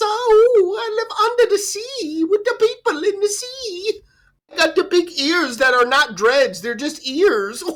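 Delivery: goofy, very high voice with a stretched oh. Mocking someone for talking like this, in a Jar Jar voice. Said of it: "You're talking like this".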